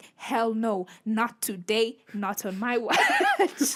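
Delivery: very slow, loud, drawn-out, swooping defiant delivery. Retelling own reply to a driver trying to overtake: defiant refusal. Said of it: "And I'm like".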